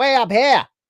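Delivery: shrill, squeaky, loud Australian accent, very high. Joking that Australians talk high, high-pitched Australian voice. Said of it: "Australians have a really high-pitched voices".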